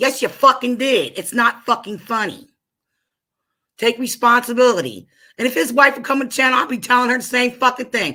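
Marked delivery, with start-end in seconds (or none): 0.0-5.1 pissed-off, angry voice. Venting on a stream to someone who pissed her off: angry. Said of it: "that shit has me pissed".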